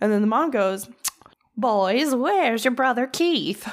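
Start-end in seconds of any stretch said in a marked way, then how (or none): 1.6-3.7 put-on old-fashioned nineteen-fifties mother voice, pitched up. Retelling a mother asking her boys where their brother is: 1950s parent voice. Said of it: "that's how parents talked in the fifties".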